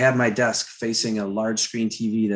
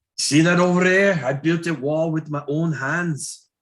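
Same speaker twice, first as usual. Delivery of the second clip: high, put-on Scottish accent throughout; 7 semitones higher than usual. Riffing with another speaker, keeping a Scottish accent going. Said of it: "Scottish accent going here".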